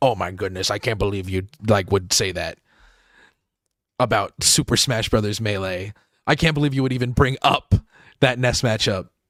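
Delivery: low, fake shocked outrage. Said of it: "feign being like".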